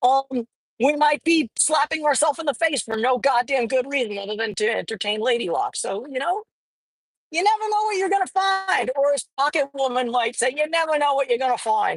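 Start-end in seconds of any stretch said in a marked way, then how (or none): 10.6-12.0 bad, terrible put-on Australian accent. Speaker repeating their own phrase the way Pocket Woman might say it, bad Pocket Woman Aussie impression. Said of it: "that's a terrible Aussie accent".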